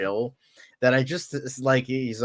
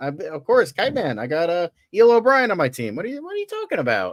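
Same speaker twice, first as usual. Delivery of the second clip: animated, put-on stand-up comedian patter voice; 7 semitones higher, 4 dB louder than usual. Riffing on someone playing Kite Man: Mark Normand impression. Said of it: "I'm doing a Mark Normand impression".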